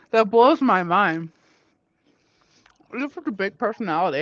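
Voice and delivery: talking while chewing. Chatting with someone while eating, talking while chewing. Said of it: "I apologize for the chewing".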